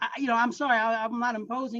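stammering delivery. Retelling an apology after being caught listening at the door: imitating own stuttering.

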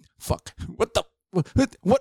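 panicked outburst. Retelling being ambushed in a game while reloading: retelling his own panicked outburst. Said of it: "in the middle of me panicking".

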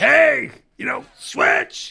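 high-pitched shouting.

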